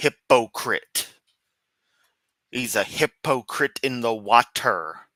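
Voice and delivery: slow, drawn-out, mocking delivery. Mocking the way Kent says the word hypocrite. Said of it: "let me say it like Kent does".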